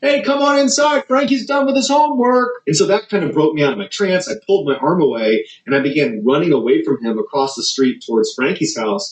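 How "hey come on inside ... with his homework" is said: acted-out, very high-pitched, loud yelled call. Retelling how Frankie's mom came outside and called, imitating a yell.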